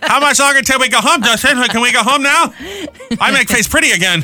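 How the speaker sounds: very high-pitched voice. Speaker imagines Kate Upton watching Justin Verlander into extra innings: Kate Upton impression. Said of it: "I was just doing an impression of her".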